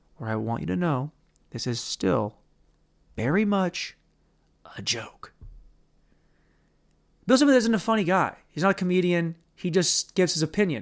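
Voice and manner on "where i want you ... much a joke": grave, deliberate, halting, low, slow, serious delivery. Speaker insists everything is a joke, whatever the inflection: serious, slow talking voice. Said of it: "my serious, slow talking voice".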